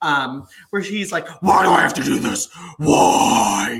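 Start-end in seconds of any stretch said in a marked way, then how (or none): 1.4-3.8 mock, loud, furious, temper-blown rant. Retelling a wrestling segment: imitating Triple H losing his temper. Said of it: "Triple H loses his shit".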